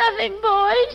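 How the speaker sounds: high, weepy, tearful crying voice. A mother answers her sons' question about what's wrong, crying. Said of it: "How come you're crying?".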